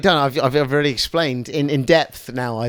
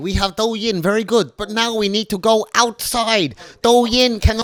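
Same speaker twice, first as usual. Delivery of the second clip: put-on Chinese accent, pitched up; 7 semitones higher than usual. Explaining Douyin and TikTok to the others, acting out China: put-on Chinese accent. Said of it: "What's with that accent".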